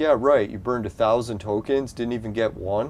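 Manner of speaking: normal talking voice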